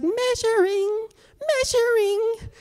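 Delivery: very high, cheerful robot announcer voice. Imitating a board that measures you: happy robot voice. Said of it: "there's this happy robot voice".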